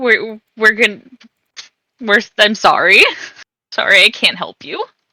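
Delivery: tearful, sobbing, crying voice. Player's character apologizing to a creature they can't save, crying. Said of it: "I am crying and just saying".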